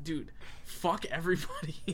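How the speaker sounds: ordinary delivery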